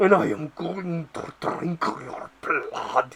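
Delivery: put-on slow, whispered, wheezing, breathy gravelly snarl. Reviewing a vampire movie, imitating Count Orlok's gravelly snarl. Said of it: "talks in this really grovelled voice".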